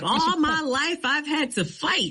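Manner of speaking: mad, very high-pitched, fired-off outburst. Recalling a scene from The Color Purple, imitating Oprah Winfrey mad. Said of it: "she's mad and she's like".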